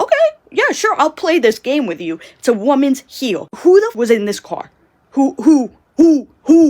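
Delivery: mock furious, accusing, high, loud angry yelling. Retelling a car argument between parents, imitating mom yelling. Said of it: "my mom starts yelling".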